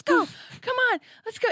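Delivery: mock, very high-pitched shouting. Retelling calling the dog away from a skunk: retelling yelling at the dog. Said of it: "I was yelling at him".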